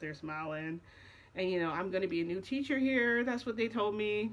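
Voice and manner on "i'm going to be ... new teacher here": usual speaking voice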